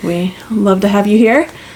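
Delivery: normal talking voice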